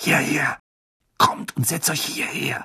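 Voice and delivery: urgent, hissed voice. Ron calls the others over to sit with him, hissed. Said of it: "zischte Ron".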